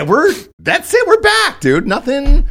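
very high, mock cheerful, sarcastic crowing.

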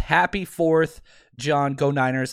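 usual speaking voice

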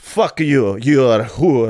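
imitated Russian accent. Retelling the reaction expected from a character, in a Russian accent. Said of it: "turn into a Russian all of a sudden".

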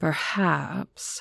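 whispered, breathy, mocking, purring taunt. A hypnotist calls out someone hiding at the crowd's rear, purring, mocking voice. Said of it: "he said in a purring, mocking voice".

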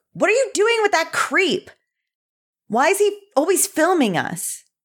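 very high, wildly swinging, swooping shout. Voicing a character yelling at another about a creep: acted yelling. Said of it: "she'll yell".

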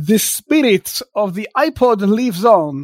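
heavy, thick, fake put-on Russian accent. Speaker reading a news item aloud, thick mock russian accent. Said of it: "in a thick, uh, mock Russian accent".

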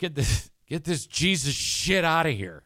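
play-acted blunt, deliberate, very slow, loud, drawn-out delivery. Retelling their own reaction to some tracts a friend was handed, said really loud. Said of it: "I said it really loud".

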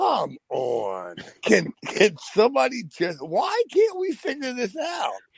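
very high yell, climbing and swooping in pitch. Retelling waiting hours alone in the car after the last delivery: imitating own yelling. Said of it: "So I'm just yelling".

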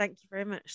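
mock-grateful sarcasm. Recounting what you said during a stressful incident, retelling sarcastic thanks.

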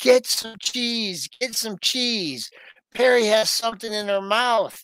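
mock urgent, alarmed calling out, like a scream. Retelling a story, the speaker quotes a woman running outside: retelling a scream. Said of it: "she is screaming".

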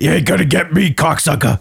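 high, tough-guy taunt. Retelling how a comedian reacted to being targeted: Joey Diaz impression. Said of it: "That was actually a really good impression".

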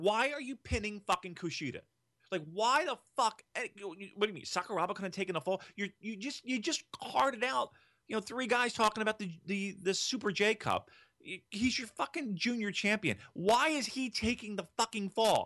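enraged yelling, furious rant, voice very high. Recalling watching a wrestling match on tv, retelling furious screaming. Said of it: "you should have saw me screaming at my television".

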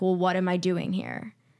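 put-on angry voice. Retelling what he said after being turned down: imitating someone angry. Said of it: "genuinely angry".

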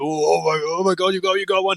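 high, thrilled, excited gush with stretched-out oh. Describing how people genuinely looking for it react; imitating a really excited person. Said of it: "really excited".

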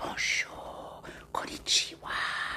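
very soft, quiet whisper.

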